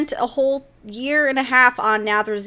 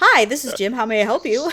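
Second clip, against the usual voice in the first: mock, by-the-book, very official tone. Retelling how he answered a caller, retelling a super-official greeting. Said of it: "super official".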